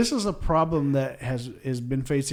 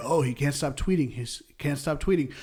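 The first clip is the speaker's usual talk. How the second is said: ordinary talk, nothing marked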